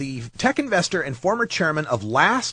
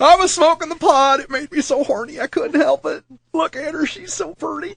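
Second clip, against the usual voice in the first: put-on Deep South accent; 10 semitones higher, 4 dB louder than usual. Speaker acts out a British offender's excuse in a Deep South redneck accent. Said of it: "the British guy suddenly turned into a redneck from the deep south".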